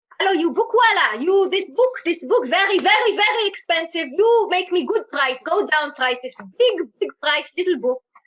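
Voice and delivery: put-on very heavy Israeli accent, loud and high. Retelling how you haggled with a bookseller in India, in a very, very Israeli accent. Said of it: "then I sound very, very Israeli".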